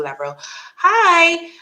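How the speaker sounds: strange surprised voice, high, slow, loud hi.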